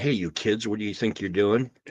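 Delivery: put-on fatherly, parental scolding tone. Joking about a slap as a warning, put-on fatherly scolding. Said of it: "that's kind of a fatherly way of saying".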